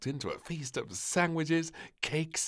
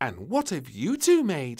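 loud, booming, insistent and demanding tone; 3 semitones higher, 8 dB louder than usual. Reading a story, the little princess points at two players and asks: demanding. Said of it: "Demanded Little Princess".

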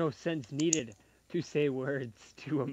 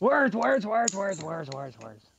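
yelling, much higher in pitch; 5 semitones higher, 4 dB louder than usual. Acting out yelling random words at a search system, yelling. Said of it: "You're just gonna yell words".

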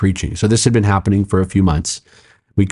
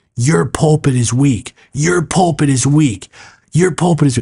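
put-on high scream, repeated over and over; 7 semitones higher than usual. Retelling how a man yelled at the teaching pastor, imitating him screaming. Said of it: "Screaming at him".

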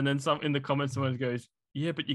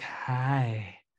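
put-on shy, whispery villain voice. Mocking how the film's Jafar sounded: shy whispery Jafar voice. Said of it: "he went with a very shy, whispery evil".

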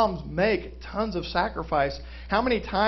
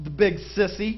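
plain

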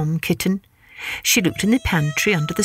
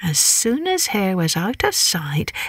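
ordinary delivery

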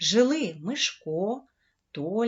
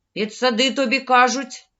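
loud, sharp, snapping retort; 3 semitones higher, 8 dB louder than usual. Narrator reading a boy snapping back at a hesitant friend, snapping back. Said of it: "огризнувся Мишко".

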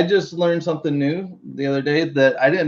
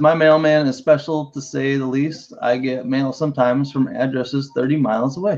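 normal talking voice

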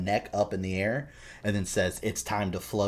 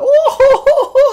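very high, loud, shrill, slow, drawn-out fake sob; 18 dB louder than usual. Describing a wished-for game scene, imitating Pennywise making fun of someone. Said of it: "making fun of him".

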